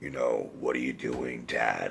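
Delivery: very low, sardonic mumble, barely audible. Showing why nobody else could have played the part, very low, mumbly Harrison Ford voice. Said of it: "like mumbly voice that Harrison Ford is famous for".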